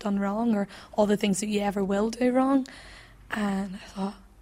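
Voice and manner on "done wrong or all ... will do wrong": ordinary talk, nothing marked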